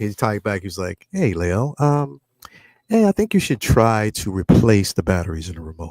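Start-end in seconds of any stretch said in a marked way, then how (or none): 1.1-5.9 put-on politely helpful, courteous voice. Retelling a typed reply from Yoast, imitating Yoast's polite voice. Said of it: "And that polite voice".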